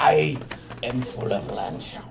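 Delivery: gravelly put-on pirate voice, very low growl. Redoing the line in a gravelly pirate voice. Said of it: "That's me pirate voice".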